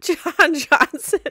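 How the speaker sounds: mock tour guide voice, slow and high.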